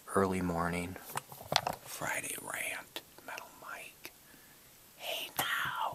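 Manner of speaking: hushed whisper. Recording early morning while everyone sleeps upstairs, whispering. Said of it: "I'm whispering".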